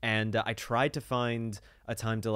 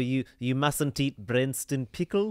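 loud put-on South African accent, done for show; 4 semitones higher, 4 dB louder than usual. Repeating a friend's line about branston pickle, put-on south african accent. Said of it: "That's my South African accent".

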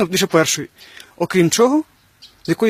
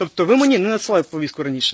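plain

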